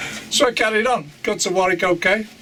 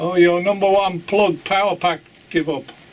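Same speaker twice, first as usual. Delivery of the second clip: put-on East European accent, broken English. Retelling how a man checked the car, speaker quotes him in east european accent. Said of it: "In an Eastern, uh, East European accent".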